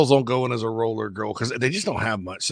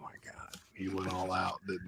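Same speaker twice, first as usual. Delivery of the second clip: mock embarrassed, sheepish murmur, very hushed, soft and slow; 4 semitones lower, 19 dB quieter than usual. Retelling how the wife reacted to the costume: imitating the embarrassed wife. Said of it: "the wife being embarrassed, ... she's like".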